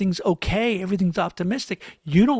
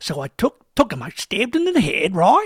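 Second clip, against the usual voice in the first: cheery, upbeat uptalk, pitch lifting on final right. Joking how rising intonation makes anything sound positive: upbeat rising ending on right. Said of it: "And it would sound positive".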